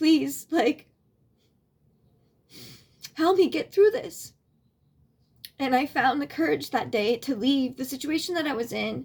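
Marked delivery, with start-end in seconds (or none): 0.0-4.3 put-on crying, high, tearful begging. Retelling praying on knees in the jungle: imitating own crying plea. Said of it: "on my knees, like, crying, like".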